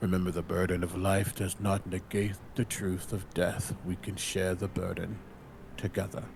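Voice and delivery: muttered half to oneself, low soft murmur under breath. Voicing a character, hand on Azalea's shoulder, speaking under his breath. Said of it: "kinda under his breath".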